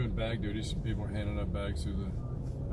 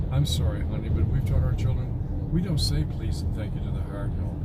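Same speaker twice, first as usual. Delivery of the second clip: usual speaking voice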